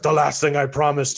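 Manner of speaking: put-on growly hero voice. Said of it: "he's like".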